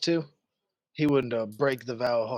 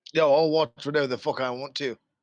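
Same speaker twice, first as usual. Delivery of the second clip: rude, insolent, impolite tone; 4 dB louder than usual. Answering a vampire bride in character: rude tone. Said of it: "I'd watch the way you're talking".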